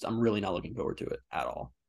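ordinary delivery

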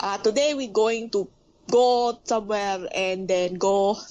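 English with a Filipino accent. Showing how Filipinos sound when speaking English, in a Filipino English accent. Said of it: "it will sound like this".

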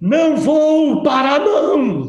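put-on, high, yelled outburst. Retelling a man who refused when told to stop: imitating someone yelling. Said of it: "arregalou os olhos assim na maneira e começou a gritar".

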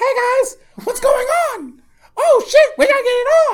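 very high, swooping cartoon voice. Showing how a dub would make the speaker sound: Mickey Mouse voice. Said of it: "I kinda sound like Mickey Mouse".

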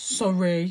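mock grudging, sulky tone full of attitude. Retelling a child's forced apology at bedtime: imitating a sulky sorry. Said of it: "with a real bit of attitude".

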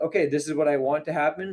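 ordinary talk

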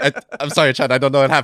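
very high, loud, stammering delivery. Retelling a game clip where xQc forgets English: imitating xQc stammering apology. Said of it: "He's like".

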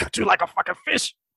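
sudden, unhinged, crazed, murderous menace. Retelling a killer's line after calm talk: imitating a sudden crazed killer. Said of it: "all of a sudden turn into this crazy ass kill".

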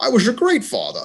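high-pitched, squeaky put-on Scottish accent. Talking about a confidently delivered line, the speaker attempts it in a Sean Connery accent. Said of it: "do I have to attempt a Sean Connery accent?".

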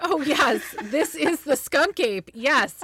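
acted sure, expert-sounding voice. Mocking people who identify a skunk ape: mock-authoritative tone. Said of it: "they say it with such authority, like".

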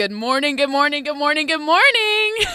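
mimicked energetic voice. Mimicking how a man greeted the press; retelling an energetic greeting. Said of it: "so energetic".

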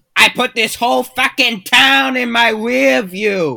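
loud, high, belted Boston accent. Someone from Massachusetts is asked to do the accent, so answer in Ted's Boston accent. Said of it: "Can you do a Boston Ted Seth MacFarlane accent?".

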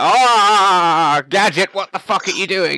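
slow scolding tone with long drawn-out ah. Riffing on a gritty Inspector Gadget show, acting as Gadget's chief. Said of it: "And then the chief's like".

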